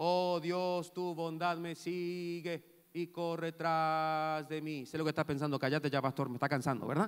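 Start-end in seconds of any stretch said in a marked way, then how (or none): 0.0-4.8 droning, flat, monotonous group reading aloud. Showing how a group reads aloud together: monotonous reading. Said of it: "de manera monótona".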